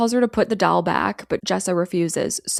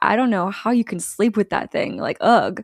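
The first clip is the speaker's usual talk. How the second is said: put-on playful, teasing tone. Speaker retells what a man on a recording says to a woman; mock-playful teasing. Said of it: "Mike's voice is playful now".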